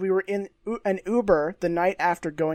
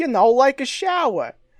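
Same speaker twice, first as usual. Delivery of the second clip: put-on, fake Italian-American accent, loud and high; 7 semitones higher, 5 dB louder than usual. Retelling a man's odd answer about why he wanted to leave; fake Italian-American accent. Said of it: "he continues to make asides in this voice".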